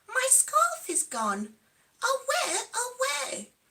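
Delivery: very high, swooping, gasping little bear cub voice. Reading a story aloud, voicing a bear cub who gasps: gasping bear cub. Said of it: "he gasped".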